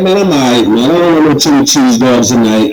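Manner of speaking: usual speaking voice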